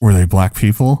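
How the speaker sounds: whispering. Reading out a review where he leaned close: imitating a whisper. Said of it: "he leaned close to me and he whispered".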